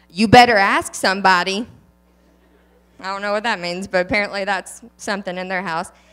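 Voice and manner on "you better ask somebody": heavy, excessive sass laid on thick. Saying a quote someone gave them, with excessive attitude. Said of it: "Say this with excessive attitude".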